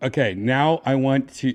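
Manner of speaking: ordinary delivery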